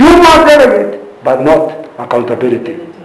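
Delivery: must said with strong emphasis. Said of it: "I have to keep emphasizing".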